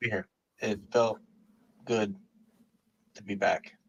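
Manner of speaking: soft, flat, stiff robotic monotone. A guest speaks after being thanked by the host, talking like a robot. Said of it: "why are you talking like a robot?".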